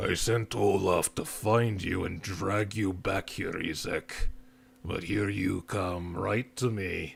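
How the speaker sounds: deep, low creature voice. Game master voicing a Garchomp addressing Isaac, in a deep booming voice. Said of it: "the deep booming voice".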